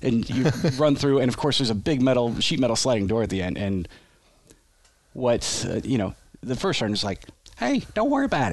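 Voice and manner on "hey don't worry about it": very high-pitched, put-on Arkansas accent. Retelling an army story, quoting the first sergeant in an Arkansas accent. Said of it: "He's got this Arkansas accent".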